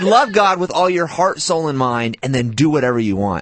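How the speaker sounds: ordinary delivery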